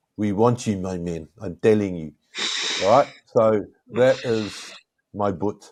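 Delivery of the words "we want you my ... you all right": clumsy, bad, rough put-on South African accent. Talking about playing south africa, putting on a bad south african accent. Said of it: "that was my South African, um, ... accent, but not, not very good".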